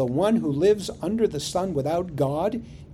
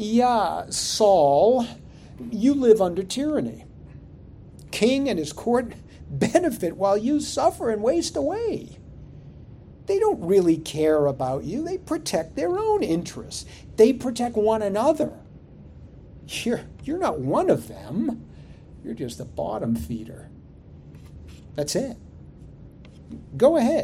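mocking, ironic, sarcastic, swooping sing-song tone; 5 semitones higher than usual. Voicing an imagined sage talking to a godless person; sarcastic tone. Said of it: "with a sarcastic tone".

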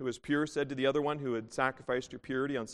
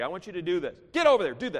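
loud, swooping, rude and bossy; 5 semitones higher, 6 dB louder than usual. Imitating a rude boss giving orders at work: imitating a rude boss's tone. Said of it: "that tone of voice".

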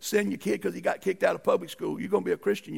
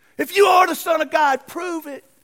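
shrill, very loud, high hollering; 10 semitones higher, 11 dB louder than usual. Retelling what they hollered at Jesus on the cross, retelling a holler. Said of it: "they hollered to him".

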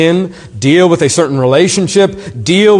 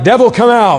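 high-pitched, commanding put-on screaming cry; 6 semitones higher than usual. Retelling how some people confront the devil: imitating people screaming. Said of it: "They start screaming things like".

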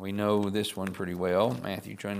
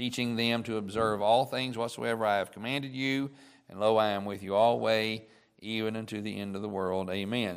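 normal talking voice

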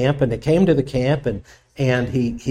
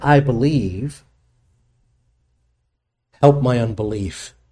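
slow, desperate, begging plea. Retelling what a man said when he begged, imitating his begging. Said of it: "He begged Jesus".

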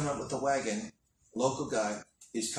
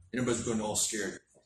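ordinary talk, nothing marked

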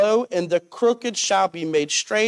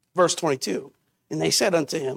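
ordinary delivery

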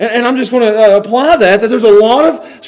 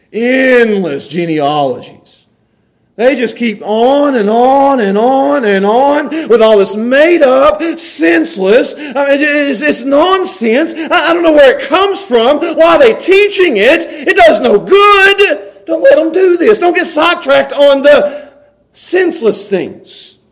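slow, rising, frustrated outburst. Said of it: "You can hear the frustration in his voice".

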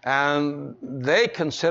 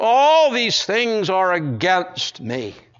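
put-on sad, mournful, sorrowful tone; 4 semitones higher, 4 dB louder than usual. Acting out a bereaved father's response to losing his sons, acting out a mournful complaint. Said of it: "Sad, mournful complaint".

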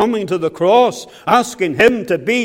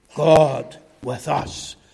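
strong emphasis on God; 5 semitones lower, 5 dB quieter than usual. Repeating the name a second time: strong stress on God. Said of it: "I should just say it again to you and put emphasis on the name of God".

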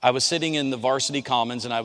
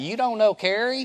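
put-on easygoing, pitched-up North Carolina accent; 10 semitones higher than usual. Retelling sitting at a round table, the speaker quotes Rusty: Rusty's North Carolina accent. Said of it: "Rusty says in his North Carolina accent".

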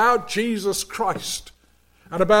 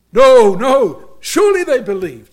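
put-on broad, thick Welsh accent, loud and swooping; 3 semitones higher, 6 dB louder than usual. Retelling a woman's reply to his story: broad Welsh accent. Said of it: "in a broad Welsh accent".

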